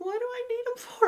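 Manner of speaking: very high, little, squeaky voice. Recalling being asked for a death certificate at forty-seven, in a squeaky high voice. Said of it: "in this like really squeaky high voice going".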